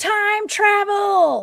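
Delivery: very high, loud, piercing woman's shriek. Retelling a woman's voice heard across a creek at night, imitating a woman screaming. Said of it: "She screamed".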